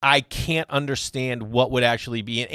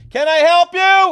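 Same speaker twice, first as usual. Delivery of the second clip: very high, very loud, taunting trash-talk tone; 10 dB louder than usual. Retelling a dugout bit after a batter took a strike: imitating Billy Burrill's trash talk. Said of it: "one of the greatest trash talkers".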